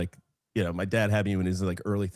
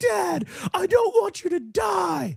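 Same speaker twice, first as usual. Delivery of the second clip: very high young kid's yell, acted, drawn out. Retelling yelling at dad as a very young child: imitating a child yelling. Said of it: "I would yell at my dad".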